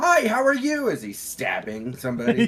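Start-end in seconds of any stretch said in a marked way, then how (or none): 0.0-0.9 mock cheerful, smiling voice. Acting out a smiling character greeting someone while stabbing them: imitating a cheerful greeting. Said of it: "He's got a big smile on his face and he's saying".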